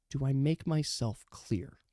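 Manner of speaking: quiet menacing voice. Voicing a character who leans into a player's ear to threaten him: menacing threat into the ear. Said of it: "just into your ear, so only you can hear this".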